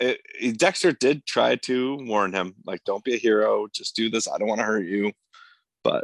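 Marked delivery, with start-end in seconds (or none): none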